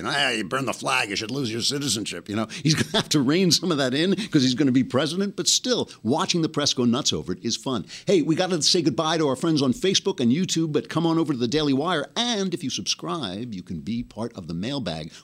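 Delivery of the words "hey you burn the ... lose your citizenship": loose, offhand guy-in-a-bar talk. Imitating how someone talks, like a guy in a bar. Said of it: "he's talking like a guy in a bar".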